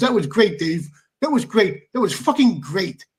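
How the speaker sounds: words broken up by laughing, talking through laughter. Retelling what the referee said after the match, imitating Walter laughing while talking. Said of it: "He was still laughing".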